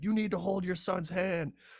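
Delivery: high, freaked-out, scolding tone. Retelling how a security guard yelled at him about his son: retelling the guard's yelling. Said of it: "starts freaking out and yelling at me".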